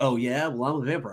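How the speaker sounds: normal talking voice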